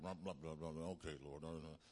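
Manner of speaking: droning, ritual-like monotone. Acting out a pastor praying alone in his prayer closet, monotone ritualistic prayer. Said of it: "monotone, religious, and ritualistic prayer".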